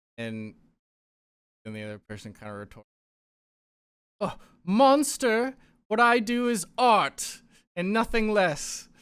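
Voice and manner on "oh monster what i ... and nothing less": very high, very loud, drawn-out yell. Two characters argue, and the second one retorts, shouting. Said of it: "They're just kind of shouting at each other".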